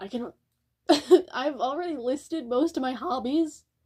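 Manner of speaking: voice cracking partway through the sentence. Talking about your hobbies away from music, voice cracking. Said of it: "Voice crack of the century".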